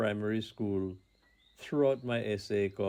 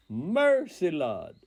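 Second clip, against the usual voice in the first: loud, high, ringing, full-throated shout; 7 semitones higher, 5 dB louder than usual. Speaker acts out his grandmother shouting at an image on the wall: retelling a shout.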